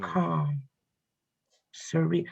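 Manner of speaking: calm, soft audiobook narrator reading voice. Describing an isolated stretch of beach: like an audiobook narrator. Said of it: "I sound like audiobook guys".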